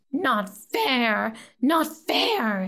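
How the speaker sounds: swooping, hissed creature voice. Reading a story: an upset riddle player protests to his opponent, hissing. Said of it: "he hissed".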